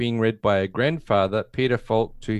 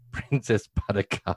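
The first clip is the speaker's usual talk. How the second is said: giggling, laughing while speaking. Reading out a film summary to another speaker, laughing while talking. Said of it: "now let's say that again with a straight face".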